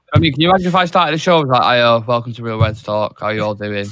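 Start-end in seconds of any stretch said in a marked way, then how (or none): 1.6-3.8 flat, lifeless, low, joyless monotone. Imagining opening the real reds talk show in a flat, joyless monotone. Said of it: "seems very monotone and very like oh like he can't be happy in there".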